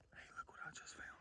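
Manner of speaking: very quiet, soft, breathy, hushed whisper. Speaker, after everyone has left, shows something just found: whispering. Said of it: "Why am I still whispering?".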